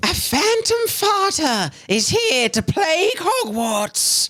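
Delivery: high-pitched whispery tone. Reading a book aloud with a co-reader, in a high-pitched, whispery tone. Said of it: "It said in a high-pitched, whispery tone".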